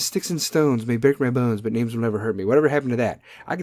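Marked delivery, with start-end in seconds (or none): none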